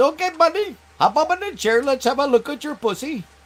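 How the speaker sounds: high-pitched put-on Indian accent. Retelling what a doctor said in the chair: imitating a doctor's Indian accent. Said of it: "But he talked like that".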